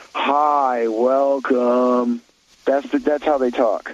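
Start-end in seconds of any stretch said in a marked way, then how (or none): 0.2-2.2 listless, bored, unmotivated drawl, zero enthusiasm. Imitating an unmotivated Gen Z desk greeter: imitating their Gen Z drawl. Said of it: "This is exactly the tone you will receive".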